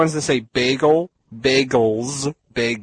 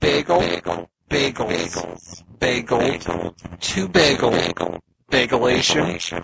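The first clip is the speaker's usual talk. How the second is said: acted robot-like alien voice; 2 semitones lower than usual. Saying the word list again when asked to speak as a Dalek: Dalek voice. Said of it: "please say it while you're a Dalek".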